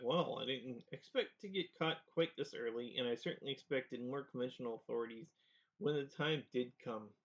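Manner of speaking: ordinary talk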